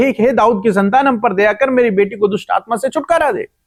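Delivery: plain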